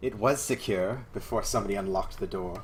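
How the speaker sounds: annoyed, irritated, put-out tone. The game master voices a woman answering the players' characters; scowling, irritated. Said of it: "she scowls at you and says".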